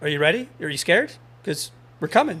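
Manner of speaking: teasing, goading, sing-song taunting, acted out. Retelling taunting the other team during a pool match: retelling own taunting. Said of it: "I was totally messing with them".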